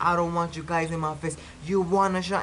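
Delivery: mock tearful, angry crying outburst. Retelling a man's meltdown at the cameraman, acting out crying and mad. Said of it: "He's like crying and mad".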